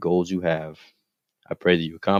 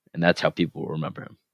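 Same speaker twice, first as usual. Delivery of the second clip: ordinary talk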